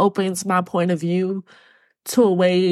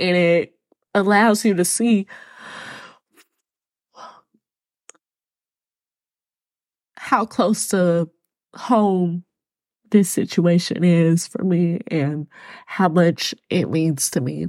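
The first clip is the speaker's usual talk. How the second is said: tearful voice, crying while talking. Telling listeners it's okay to cry over a mother's situation, crying while talking. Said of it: "I deserve to be able to cry right now".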